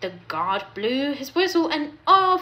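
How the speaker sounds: plain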